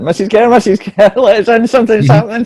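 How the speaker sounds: urgent, high-pitched yelling. Knocking on a door with two others, shouting to be let in. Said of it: "knocking on this door, shouting".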